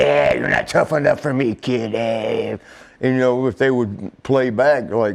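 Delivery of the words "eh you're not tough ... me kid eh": scratchy, rasping woman's voice. Retelling how a female wrestler brushed off flirting men: imitating her scratchy voice. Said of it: "she had that scratchy voice".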